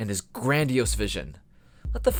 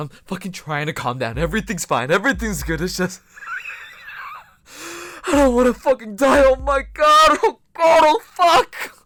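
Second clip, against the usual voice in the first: frantic panic, fast, rising, swinging wildly; 10 semitones higher, 8 dB louder than usual. Trying to calm down while oxygen runs out: panicking, trying to calm down. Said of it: "I'm trying to calm down".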